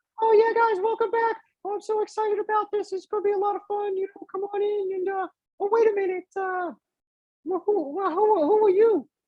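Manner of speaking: very high cartoon-style gnome voice. A narrator voices a gnome welcoming the group back, in a Mickey Mouse-like gnome voice. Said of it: "Both of you sound like Mickey Mouse".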